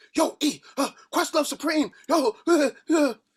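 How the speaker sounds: wild, very high-pitched, fast, excited, hyped babble. Imitating a friend who kept going on for two weeks: imitating Walt going crazy. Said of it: "all Walt was doing for the past two weeks".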